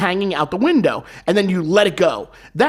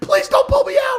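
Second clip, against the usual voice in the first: put-on shrill, very high, desperate, panicked yell. Recounting grabbing the pilot's leg on a small plane, the speaker retells a yell. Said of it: "I'm yelling for".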